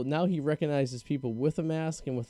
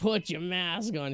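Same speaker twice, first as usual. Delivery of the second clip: mock scary, intimidating old woman voice, higher; 3 semitones higher than usual. Retelling an old lady telling two men in a store: imitating a scary, intimidating old lady. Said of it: "very scary and very, very intimidating".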